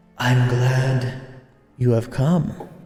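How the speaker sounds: wispy, strange, odd character voice. Narrator voicing a hooded figure who closed the gate behind the group, wispy strange voice. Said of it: "In kind of like a wispy, kind of strange voice".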